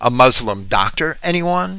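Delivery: ordinary talk, nothing marked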